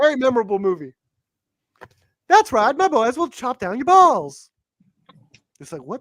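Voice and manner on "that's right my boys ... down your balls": put-on high-pitched comic voice. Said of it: "doing a Miss Doubtfire impression or something".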